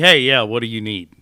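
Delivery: put-on loud, grumpy, unpleasant voice. Showing how he sometimes answers callers on the phone, mock-grumpy phone answer. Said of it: "not the most pleasant voice to hear".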